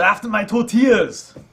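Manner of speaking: high, loud, put-on Austrian-accented yell. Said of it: "I just want him to yell".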